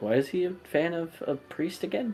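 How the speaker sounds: high, hushed, quiet half-whisper. Acting out a child half-whispering a question to a parent: imitating a half-whisper.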